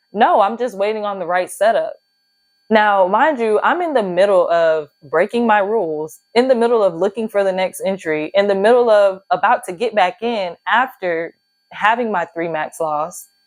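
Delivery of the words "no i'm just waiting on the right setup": put-on sure, self-assured tone, said aloud. Retelling own reply out loud to an inner question: imitating own confident reply. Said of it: "saying so confidently to myself out loud".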